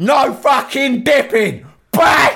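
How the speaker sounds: shrill, yelled, pitched very high. Retelling a fight story, imitating the brother shouting. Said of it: "And he just shouts".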